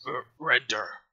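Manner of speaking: crude, crudely spoken goblin voice. Voicing a big goblin demanding surrender: crude goblin speech. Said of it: "very crudely, he says".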